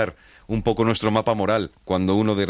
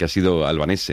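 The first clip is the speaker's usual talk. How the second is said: normal talking voice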